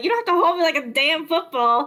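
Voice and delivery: play-acted pouty, sulky, put-out voice. Voicing a character carried under someone's arm: pouty, sulky voice. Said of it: "she looks pouty, and she's like".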